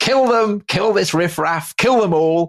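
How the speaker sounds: play-acted, excited, loud, very high battle-cry yell. Retelling a battle, acting out a man shouting for the attack: retelling a loud yell. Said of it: "starts yelling in a loud voice".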